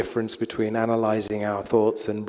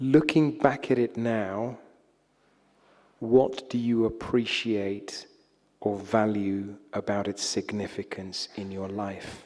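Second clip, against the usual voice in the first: unhurried, slow, carefully paced, deliberate delivery. Reading out a reflection question for the translators: slowly. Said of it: "I'll say it slowly twice".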